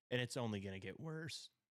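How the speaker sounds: voice cracking and breaking mid-phrase. Arguing that television will keep getting worse, the speaker's voice cracks mid-sentence. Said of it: "voice crack".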